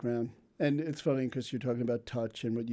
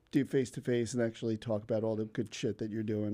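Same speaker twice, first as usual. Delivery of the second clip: plain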